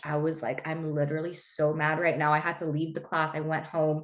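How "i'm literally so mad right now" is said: normal talking voice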